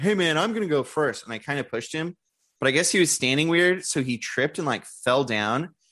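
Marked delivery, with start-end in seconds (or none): 0.0-1.2 put-on playful, jokey, teasing tone. Retelling standing at the top of a slide with two others, retelling a joking remark. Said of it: "I jokingly was like".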